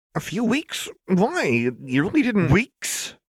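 very high, swooping, sharp snapping voice. Lux snaps at Jinx, who is in her grip. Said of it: "Lux snapped".

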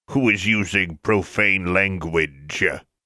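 rumbling marble-bust voice. A talking marble bust interrupts the arguing pair, rumbling voice.

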